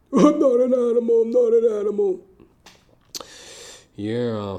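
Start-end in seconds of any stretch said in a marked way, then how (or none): 0.1-2.2 high, loud, raised cry, belted out. Doing a not-so-great impersonation of Robert De Niro in Raging Bull. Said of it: "an impersonation of Robert De Niro in Raging Bull".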